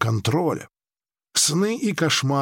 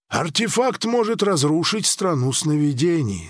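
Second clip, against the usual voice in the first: plain reading voice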